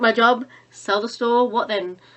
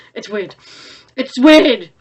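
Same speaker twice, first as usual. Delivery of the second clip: ordinary talk, nothing marked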